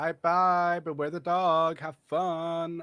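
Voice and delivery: character voice that is high, loud and slow. Voicing a talking door that speaks to a player: voice of the talking door. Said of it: "the door says".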